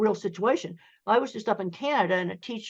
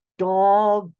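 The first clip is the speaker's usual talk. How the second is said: mock slow, careful enunciation, louder; 7 dB louder than usual. Retelling how a speech teacher said a word: imitating slow enunciated speech. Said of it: "really slowing down and enunciating the sounds".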